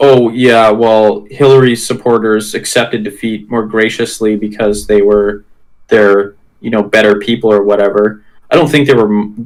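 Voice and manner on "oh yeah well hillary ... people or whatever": normal talking voice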